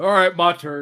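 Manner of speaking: big, loud, booming voice. The game master voices Edwin taking his turn, Edwin's booming voice. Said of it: "You hear Edwin's booming voice".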